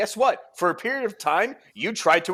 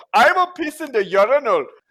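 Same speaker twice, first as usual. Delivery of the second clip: put-on spot-on, loud, high German accent; 6 semitones higher, 6 dB louder than usual. Retelling what a drunk Hans said at a urinal, in Hans's German accent. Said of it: "That was a spot on German accent".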